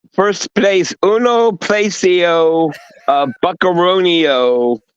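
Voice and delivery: fake Italian accent, slow and high. Joking about being in first place: mock Italian accent. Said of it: "Did you just go Italian?".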